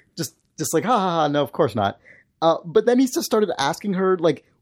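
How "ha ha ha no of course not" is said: mock laughing while talking. Retelling a telemarketer's answer to "are you a robot": imitating a laughing reply. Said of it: "laughed and said enthusiastically".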